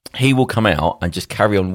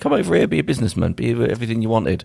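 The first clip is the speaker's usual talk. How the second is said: high, fast, coaxing sweet-talk voice. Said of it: "Russia will play him like a little fiddle and say".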